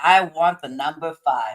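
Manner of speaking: ordinary delivery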